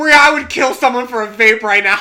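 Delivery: loud, high-pitched, tipsy stage whisper. Speaker retells leaning into a friend's ear while tipsy, retelling a loud tipsy whisper. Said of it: "thinking I'm whispering, and I go".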